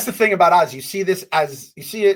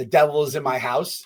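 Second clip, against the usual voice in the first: ordinary talk, nothing marked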